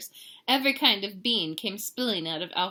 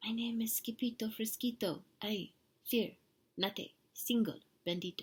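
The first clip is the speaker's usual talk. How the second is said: tiny, very soft, hushed, barely-there murmur; 9 dB quieter than usual. Narrator reads a sword fighter introducing himself to a bandito, in a very soft voice. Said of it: "in a muy, muy, muy soft voice".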